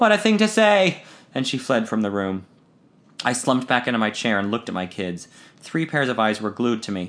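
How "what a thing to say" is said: gasped out at a very high pitch. Reading a story, a woman jumps from her chair at the narrator's remark: gasping. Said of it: "she gasped as she jumped from her chair".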